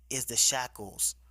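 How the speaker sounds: plain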